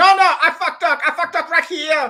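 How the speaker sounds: put-on very high, loud, heavy, thick Vietnamese accent. Retelling a voice that cut in after the name was read, thick Vietnamese accent. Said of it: "in this very thick Vietnamese accent".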